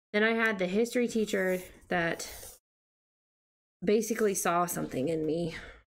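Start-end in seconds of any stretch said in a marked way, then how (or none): 3.8-5.5 sarcastic tone. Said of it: "I say that sarcastically".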